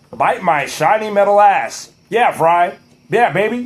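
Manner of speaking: impression of a low-voiced animated robot. Recalling the impression he did back in middle school: Bender impression. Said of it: "I used to do be able to do Bender pretty well".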